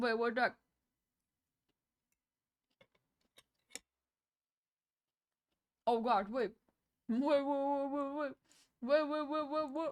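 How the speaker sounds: talking with full mouth. Reacting to an on-screen alert mid-bite: talking with food in mouth. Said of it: "I have food in my mouth".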